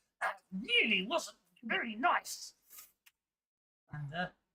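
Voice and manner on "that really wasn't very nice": slow, high, forced out through gritted teeth. Narrating a scene, the speaker voices a character who was just shot, through gritted teeth. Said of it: "he grits his teeth and goes".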